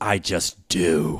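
put-on sneering tone in a British accent. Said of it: "in this British sneer".

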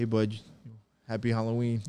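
ordinary talk

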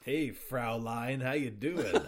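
put-on loud, big, slow American accent. Mocking a voiced German character's line: Christoph Gavin with American accent. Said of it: "speaks all of his lines with an American accent".

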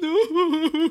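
put-on tearful voice. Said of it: "snot bubble popping myself".

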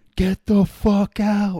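very high, very loud, drawn-out full scream. Recounting a teammate who called an airstrike on them, retelling a top-of-lungs yell. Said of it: "Like at the top of his lungs".

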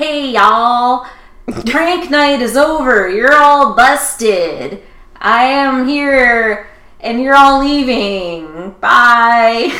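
very slow, loud, high, bad American accent, stretched "bye". The speaker mocks a character's speech in a scene, Klaus's bad American accent. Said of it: "Klaus has an American accent here for some reason, and it's really bad".

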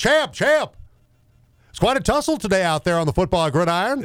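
put-on fast, high 1940s old-time broadcaster voice. Retelling a radio character's bit at Patriots press conferences, 1940s broadcaster voice. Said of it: "do this voice of like a 1940s broadcaster".

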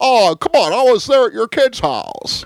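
very high, loud put-on voice, pushed out. Describing the movie's ending, quoting George pleading: Jimmy Stewart impression. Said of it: "Who hasn't heard a Jimmy Stewart impression".

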